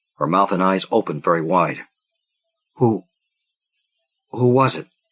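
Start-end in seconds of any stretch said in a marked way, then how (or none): 2.8-4.8 faint, small, hollow voice. Reading a character's line aloud from a story: small, hollow voice. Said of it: "she said in a small, hollow voice".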